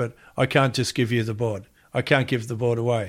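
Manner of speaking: plain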